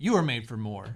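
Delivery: plain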